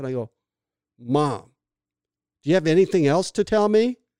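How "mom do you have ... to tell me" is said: loud, high, pissed-off, annoyed tone. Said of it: "I'm a little pissed off".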